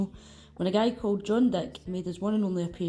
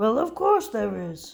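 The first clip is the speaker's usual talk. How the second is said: hefty, loud, booming giant's voice; 3 semitones higher, 5 dB louder than usual. Opening a football video, the speaker answers his own question in Hagrid voice. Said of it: "That's my Hagrid voice".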